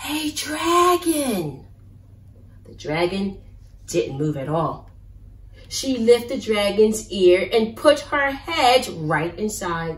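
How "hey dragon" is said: very soft whisper, much higher pitch. Reading a story aloud, a character speaks to a dragon, whispering very softly. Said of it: "Elizabeth whispered very softly".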